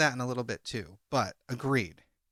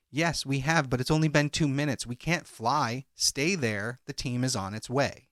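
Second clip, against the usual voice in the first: ordinary talk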